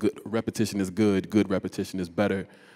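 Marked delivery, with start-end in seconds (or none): none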